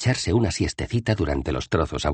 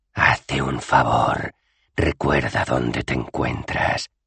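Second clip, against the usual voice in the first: dry, parched, sibilant hissing voice; 5 semitones lower than usual. Another voice in the story answers the first speaker, dry hissing voice. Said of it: "Siseó otra voz, seca como la leña".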